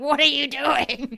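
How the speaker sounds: very loud, shrill screaming. Retelling screaming at a dancing scene in a movie: imitating a scream. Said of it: "Just screaming, like".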